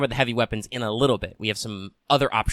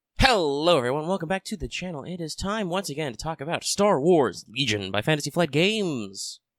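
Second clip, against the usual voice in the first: pitched-up, announcery, show-opening style delivery; 6 semitones higher than usual. Opening a channel video and welcoming viewers back, in an announcer voice. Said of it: "I was a little more announcery than I usually do".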